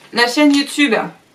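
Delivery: talking with mouth full, high-pitched. Thanking the audience for the YouTube channel, the speaker talks with mouth full. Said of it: "pardon, je mange en même temps".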